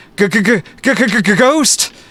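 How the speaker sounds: trembling, very high-pitched, shaky, frightened voice. Voicing a character who crouches and points, in a shaky voice. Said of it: "in a shaky voice points and says".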